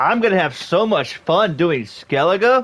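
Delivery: joyless, sarcastic excitement. A gamer announces they are about to play skellige, sarcastic. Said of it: "You can hear the fun in my voice".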